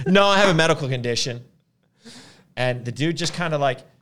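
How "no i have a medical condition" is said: really loud, pitched-up voice. Retelling your reply to a man who came right out to you, really loud. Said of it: "I said it really loud".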